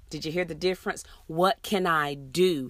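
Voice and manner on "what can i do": stress landing on the word do. Showing the right way to ask the question, stress on do. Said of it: "Here the emphasis is put on the do".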